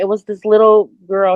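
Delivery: ordinary talk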